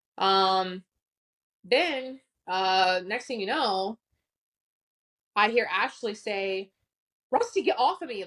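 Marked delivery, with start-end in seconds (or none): 7.3-8.3 mock frightened, urgent and panicked voice. Retelling what Ashley said as a man attacked her: imitating Ashley's panicked voice. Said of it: "in a panicked voice".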